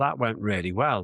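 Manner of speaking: plain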